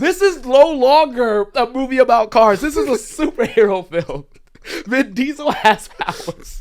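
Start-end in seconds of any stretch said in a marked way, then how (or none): 0.0-4.3 mock hysterical laughing, higher and louder. Retelling own reaction in the theater to a movie scene: imitating own past laughing. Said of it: "just laughing like".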